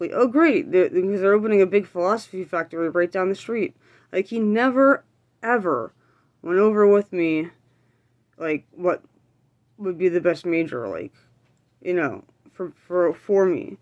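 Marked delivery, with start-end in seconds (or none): none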